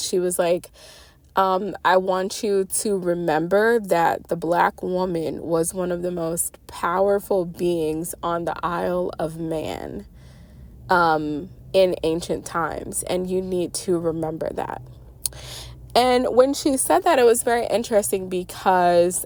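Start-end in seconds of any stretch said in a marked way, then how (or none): none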